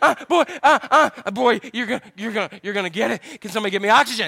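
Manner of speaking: mock winded, gasping words out between breaths. Retelling chasing his son around the house: imitating himself out of breath. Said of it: "I'm huffing and puffing".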